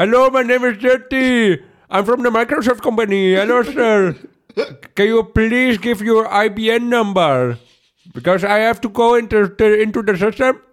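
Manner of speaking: put-on Indian English accent. Asked by a friend to show more voices, doing an indian accent impression. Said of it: "Ik kan heel goed een Indiër nadoen".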